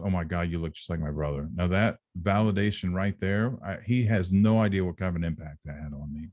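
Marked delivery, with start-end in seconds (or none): 0.0-1.5 put-on mumble under breath, lower pitch. Retelling what a newly met relative said on first meeting: imitating a mumble under breath. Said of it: "I heard him mumble un-, under his breath".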